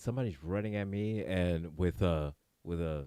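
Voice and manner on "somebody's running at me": ordinary delivery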